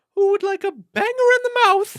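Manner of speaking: very high, loud, belted British lady voice. Retelling a TV comedy scene of a character making breakfast, Mrs. Doubtfire impression. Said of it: "He's doing like a Mrs. Doubtfire thing".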